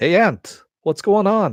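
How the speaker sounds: put-on very high voice with Yiddish New York accent. Doing the Aardvark's greeting to the Ant from a 70s cartoon, in a Jackie Mason accent. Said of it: "I'm doing the Jackie Mason accent".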